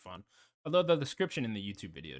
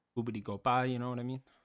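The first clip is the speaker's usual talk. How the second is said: mock Italian accent, louder; 4 semitones higher, 4 dB louder than usual. Teasing the other speaker for adding Italian to a word, mock Italian accent. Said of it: "you're putting a little Italian to it".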